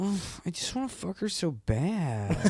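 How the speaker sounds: affected, high, drawn-out camp voice, badly done.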